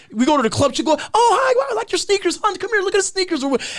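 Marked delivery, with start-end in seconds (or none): 1.2-3.5 put-on ditzy airhead suburban girl voice, way up high.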